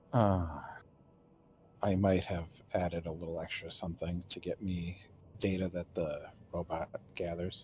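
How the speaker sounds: whispering. Voicing a character who pulls Tula closer and speaks: whisper. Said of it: "He says it, like, in a whisper".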